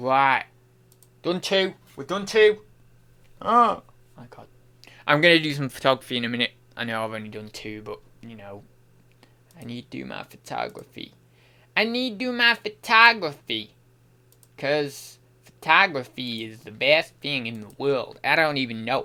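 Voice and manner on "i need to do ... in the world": put-on strange, off-kilter American accent. Speaker rambling between tasks, slipping into a weird American accent. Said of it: "What is this accent? It's like a weird American".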